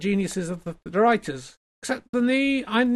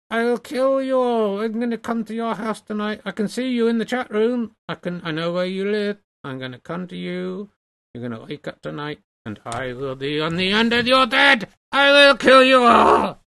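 menacing, sinister ventriloquist dummy voice. Voicing the dummy threatening the chat: sinister ventriloquist dummy voice. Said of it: "when I'm being sinister".

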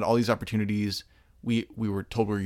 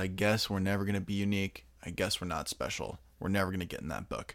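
sad, deflated, beaten-down delivery; 2 semitones lower, 7 dB quieter than usual. Quoting Gerald's line about never being unique: imitating Gerald's defeated tone. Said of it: "there's this defeated, um, tone in Gerald's voice".

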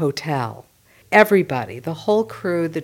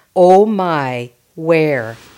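loud, pure Fargo accent, long o's, strong e's; 7 dB louder than usual. Giving the dialect coach's example of a pure Fargo accent, Marge's pure Fargo accent. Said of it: "a pure Fargo accent has long O's and strong E's".

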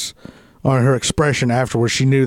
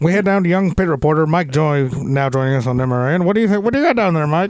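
put-on veteran race broadcaster voice, higher-pitched; 4 semitones higher than usual. Throwing to a pit reporter as a race broadcaster: Chris Economaki impression. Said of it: "my best Economaki impression".

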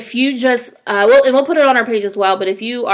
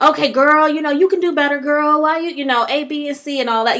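acted different voice, higher; 5 semitones higher than usual. Reenacting advice to a woman who is settling, in a reenactment voice. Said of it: "That was my reenactment voice".

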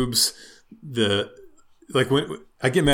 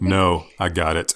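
fake angry dad voice, much lower; 6 semitones lower than usual. Telling the teenage bagger to leave the cart, in a put-on angry dad voice. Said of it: "I have to go into angry dad voice of".

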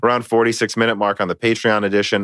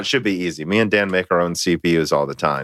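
heavy, dry sarcasm; 5 semitones lower than usual. Answering a viewer's question about making CPUs at home: sarcastic. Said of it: "we're in a very sarcastic mood today".

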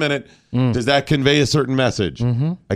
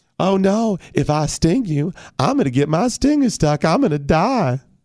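high-pitched, slow, drawn-out cartoon bee voice; 7 semitones higher than usual. Doing a cartoon bee character from a TV show: Family Guy bee character voice. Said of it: "that voice just goes everywhere".

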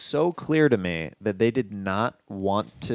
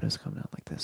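very soft quiet voice, quieter. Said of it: "very soft".

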